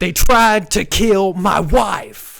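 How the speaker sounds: very loud, very high, slow drawn-out cry. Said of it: "He's doing the [name] impression".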